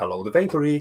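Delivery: put-on polished, posh telephone voice. Recalling answering a call from Games Workshop at the shop, fancy phone voice. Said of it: "all fancy phone voice".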